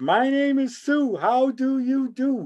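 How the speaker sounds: piping voice, very high and very slow. Recalling what Dad said when a part of a record played, in a high-pitched voice. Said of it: "in a high-pitched voice".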